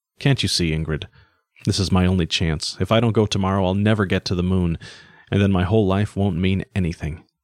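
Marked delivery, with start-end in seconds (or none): none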